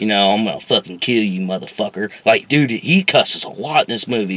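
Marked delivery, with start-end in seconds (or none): 0.0-2.1 put-on southern outlaw voice. Retelling a movie villain's threat, imitating Chris Pratt's southern outlaw. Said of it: "talking like a fucking, like a, like a southern outlaw".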